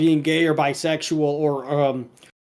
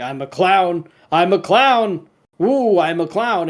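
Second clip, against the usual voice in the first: slow, gleeful, savoured delivery; 3 semitones higher than usual. Retelling Mister Big Head wearing a red nose in private: imitating Mister Big Head enjoying himself. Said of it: "he's enjoying it".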